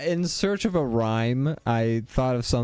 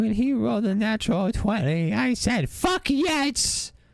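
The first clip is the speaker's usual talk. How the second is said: put-on elderly mother voice, higher; 11 semitones higher than usual. Playing a proud mom bragging about her son's dice roll: old mom voice. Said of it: "in your mom voice".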